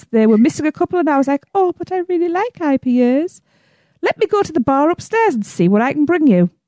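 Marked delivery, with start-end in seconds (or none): 1.5-6.5 slow, sugary sweet put-on voice. Retelling a bar exchange about ipas, in a put-on sweet voice. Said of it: "Your voice like changed".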